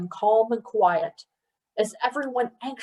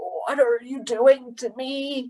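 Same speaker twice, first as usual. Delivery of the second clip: put-on croaking, suddenly very old man's voice; 3 semitones higher than usual. A withering man turns desperately to another, croaking in a suddenly ancient voice. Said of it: "he croaked in a suddenly ancient voice".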